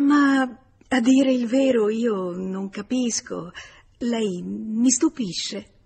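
slow, halting, flustered, stumbling stammer. Narrator reading a woman's surprised reply to a playful declaration: stammering.

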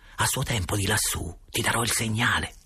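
ordinary delivery, nothing marked

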